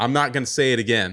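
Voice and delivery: loud, firm, stern dad voice. Describing how they stop children jumping on the couch, doing the dad voice. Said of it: "I get dad voice".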